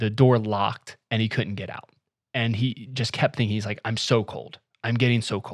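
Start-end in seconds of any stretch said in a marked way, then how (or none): none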